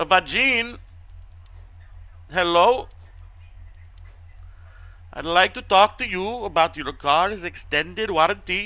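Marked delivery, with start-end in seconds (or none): 2.3-8.7 poor, pitched-up, fake put-on Indian accent. Playing a customer-service caller on a stream, in a bad indian accent. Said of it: "That's not a very good Indian accent".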